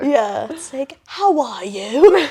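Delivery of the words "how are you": fake British accent. Show how your British accent comes out when you try it, stereotypical, like something from Dickens. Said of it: "it sounds like like something from Charles Dickens".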